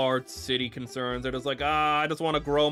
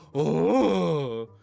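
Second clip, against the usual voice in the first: put-on loud gasp; 3 dB louder than usual. Showing the loud gasp made on a realization: imitating own loud gasp. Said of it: "That's just me actually going".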